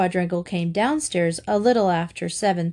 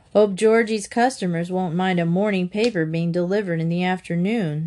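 ordinary delivery

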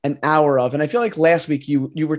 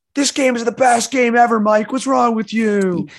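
mock, high, angry hollering; 7 semitones higher than usual. Imitating game fans yelling at a reviewer named Mike: imitating Souls fans yelling. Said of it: "they're yelling".

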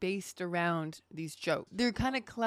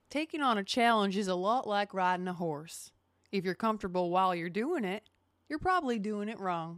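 put-on Georgia-style southern accent. Reading a quoted line aloud after being asked: put-on southern accent. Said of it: "read this line with your southern accent".

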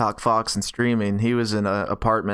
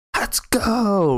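put-on shrill, hyped-up, very high, really loud yell; 10 semitones higher than usual. Retelling what a streaming roommate would hear: imitating a loud yell. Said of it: "really loud".

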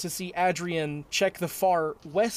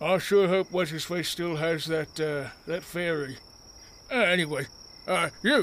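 muttered under breath, mumbled, slower pace. Lockjaw looks where the rider vanished into darkness, muttering under his breath. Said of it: "He just mutters under his breath".

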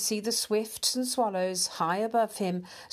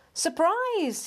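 very high, glad joyful cry; 10 semitones higher, 3 dB louder than usual. Waiting at his friend's hedge, a mouse greets him, crying out. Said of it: "he cried".

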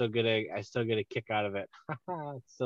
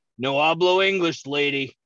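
raised, loud, jokey comic voice; 4 semitones higher, 7 dB louder than usual. Retelling a scene where someone tries to help him: Seth Rogen impression. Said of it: "fucking Seth Rogen, he's like".

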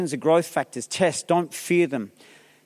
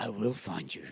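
very soft, hushed, barely above a breath; 10 semitones lower, 14 dB quieter than usual. Retelling a stare-down with a man cutting in line: Liam Neeson impression. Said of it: "I take on the Liam Nelson".

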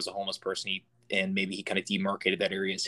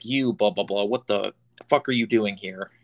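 play-acted, loud screaming outburst; 5 dB louder than usual. Retelling how a stranger on a stairwell screamed at him: imitating a man screaming. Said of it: "he starts screaming at me".

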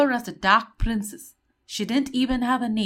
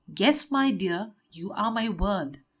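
usual speaking voice

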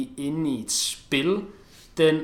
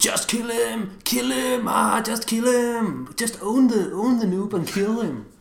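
play-acted very high, drawn-out kid yelling; 9 semitones higher, 4 dB louder than usual. Describing two kids playing, acting out how they yell: imitating kids shouting at screen. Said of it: "sidder og råber til skærmen".

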